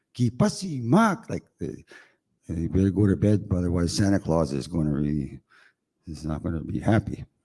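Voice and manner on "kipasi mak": put-on very high scolding grandmother voice. Explaining a grandmother's scolding tone, the speaker imitates her: mock grandmother scolding. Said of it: "when your grandmother is scolding you".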